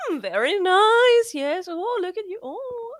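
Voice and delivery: very high, drawn-out, lingering art-teacher approving voice. Retelling a tv scene where a character acts like an art teacher: imitating an art teacher. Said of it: "walking around them like a teacher".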